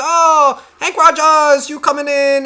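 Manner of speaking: put-on overdone high, slow Chinese accent. Retelling how a trucker is greeted when he walks in, Chinese accent impression. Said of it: "that was my fucking Chinese impression".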